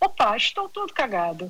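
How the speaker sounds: put-on stage-style European Portuguese accent. Retelling a line the portuguese actors said in a play, put-on portuguese accent. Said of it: "Eu estou aqui emulando o sotaque português".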